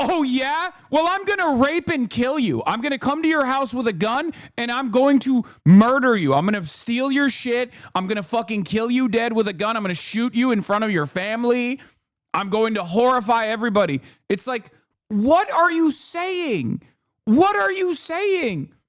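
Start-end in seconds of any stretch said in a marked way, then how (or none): 0.0-14.0 unhinged, menacing, deranged ranting delivery. Retelling how Republicans answer, imitating deranged threatening Republicans. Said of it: "And they go".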